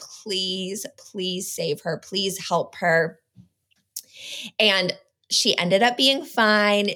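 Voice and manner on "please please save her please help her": reenacted hysterical sobbing, quieter. A mother retelling her worst nightmare, reenacting sobbing and crying out to God. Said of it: "I'm just sobbing hysterically and I'm crying out to God".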